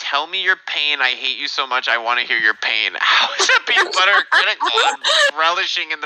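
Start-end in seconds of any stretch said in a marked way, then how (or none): 0.0-2.9 mock-laughing, taunting tone, much lower pitch. Arguing back at people who called them butthurt, retelling a laughing taunt. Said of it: "I'm literally sitting here laughing".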